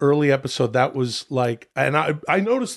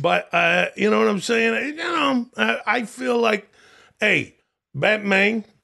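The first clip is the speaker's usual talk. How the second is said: high-pitched put-on Long Island accent. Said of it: "Why do you say it like that".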